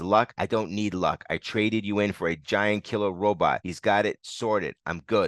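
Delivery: ordinary delivery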